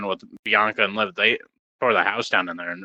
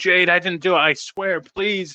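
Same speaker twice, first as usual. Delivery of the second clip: very high-pitched, begging plea; 9 semitones higher than usual. Retelling a wrestling moment where a wrestler begs another: imitating someone begging. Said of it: "so Liv started begging".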